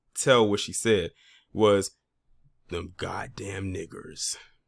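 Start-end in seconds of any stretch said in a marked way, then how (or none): 2.7-4.4 muttering under breath, quieter. Retelling what an older lady said in the room: imitating muttering under breath. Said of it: "it was under her breath".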